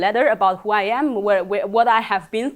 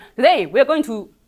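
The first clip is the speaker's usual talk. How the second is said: rapid voice at double speed; 3 semitones higher, 3 dB louder than usual. Imitating a tutorial video played at two times speed: sped up. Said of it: "but with two times speed".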